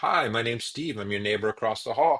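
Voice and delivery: put-on sweet, adorable English accent. Retelling a neighbor introducing himself at the door: english accent. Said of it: "in this adorable English accent".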